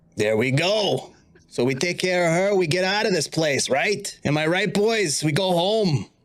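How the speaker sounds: impish, devilish little devil voice. Voicing a little devilish spirit guardian urging the group to kill her: little devilish spirit guardian. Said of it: "one of your little devilish spirit guardians".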